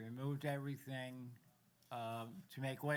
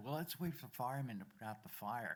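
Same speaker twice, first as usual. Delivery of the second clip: mock sarcastic tone. Retelling the boss's reply at a burning building: imitating a sarcastic reply. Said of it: "Rather sarcastically".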